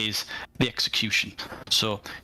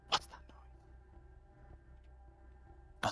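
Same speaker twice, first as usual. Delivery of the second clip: very quiet, hushed, barely audible whisper. Game master voices one of the player's men, whispering. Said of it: "one of your men whispering like".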